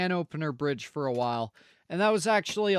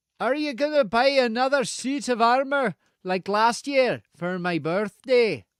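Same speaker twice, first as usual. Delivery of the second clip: unclear put-on accent, vaguely Scottish; 5 semitones higher, 5 dB louder than usual. In character, the speaker asks a question in a put-on accent meant as Scottish. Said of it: "I pronounced the word might wrongly in this accent".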